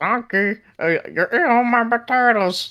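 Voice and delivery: put-on high little cartoon character voice. Asked by the others to voice a line as Kirby: Kirby voice. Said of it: "Take over as Kirby".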